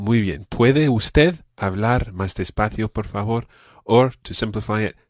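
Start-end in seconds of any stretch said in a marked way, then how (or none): none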